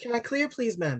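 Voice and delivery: put-on Irish accent, pitched very high. Quoting what she said to the speaker, doing an Irish accent. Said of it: "I just did an Irish accent".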